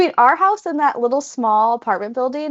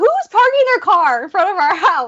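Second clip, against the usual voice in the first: loud, raised, high-pitched shout; 7 semitones higher, 4 dB louder than usual. Retelling asking loudly about a car parked outside: imitating herself saying it loudly. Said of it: "I would say it loud".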